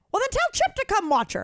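very high-pitched voice. Retelling a dog sitter's reply, imitating Mary. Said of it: "Really good impression".

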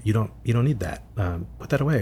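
hushed stage whisper under the breath. Retelling how she reacted when the cane came out, in a stage whisper. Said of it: "kind of in a stage whisper".

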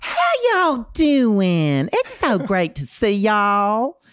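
exaggerated Southern drawl, stretched "y'all". Mocking how some Southerners greet people when someone walks in: imitating a performative Southern greeting. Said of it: "this performative sort of greeting".

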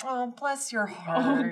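very slow, patronizing, condescending tone. Showing how women say the phrase as an insult: imitating a condescending woman. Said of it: "especially done by women who are being super cunty".

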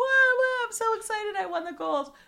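mock excited gushing, high-pitched and loud.

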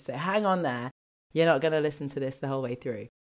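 hoarse, roughened, croaky voice. Podcast host introducing a pre-recorded episode, croaky voice from a cold. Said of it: "it's just the introduction with a croaky voice".

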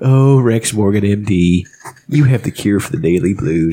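very low, deep cartoon dad voice. Retelling a newspaper aside from a cartoon episode: Homer Simpson voice. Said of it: "Homer Simpson's one asides".

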